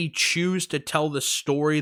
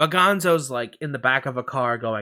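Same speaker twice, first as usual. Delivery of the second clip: plain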